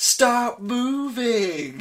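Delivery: put-on goading sarcasm, drawn out. Retelling a line said during the fight: imitating a sarcastic tone. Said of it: "the sort of sarcastic".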